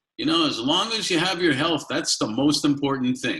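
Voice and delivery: put-on just a touch of Kiev accent. Quoting what grandparents always said about health, in a slight Kiev accent. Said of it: "with a little bit of a Kiev accent".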